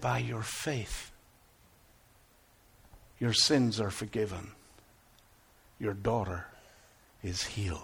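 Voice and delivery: softest hushed voice, very soft and very deep. A father retells the answer to his plea for his daughter, softest voice. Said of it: "in the softest voice".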